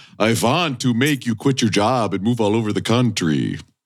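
put-on vampire character voice. Showing a Dracula who went to medical school, Dracula impression. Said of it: "my impression of a Dracula that's gone to medical school".

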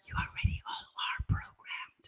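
soft, hushed whisper.

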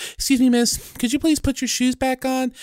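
very high, put-on, polite customer-service voice. Retelling what a woman asked, witnessed nearby, in put-on polite customer-service voice. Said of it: "she puts on the customer service voice".

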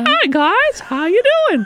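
put-on cartoon mouse voice. Listing voices they can do, Mickey Mouse voice. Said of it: "Or Mickey. I could do like".

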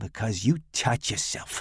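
full of disgust, repulsed. Narrator reads a mother answering her son, disgusted. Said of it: "shivering in disgust".

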